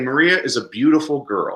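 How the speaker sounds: emphasis landing on the word beautiful. Comparing english and spanish sentence emphasis, stress on beautiful. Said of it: "the emphasis is on the adjective, beautiful".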